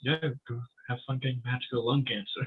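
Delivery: soft muttering under the breath, to oneself. Playing Percy as he walks away from Arthur, muttering to himself. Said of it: "walks away and mutters to himself".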